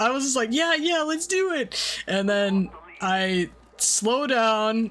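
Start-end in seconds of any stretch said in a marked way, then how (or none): 0.5-2.0 tiny, squeaky, very high-pitched voice. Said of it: "in my little, like, squeaker voice".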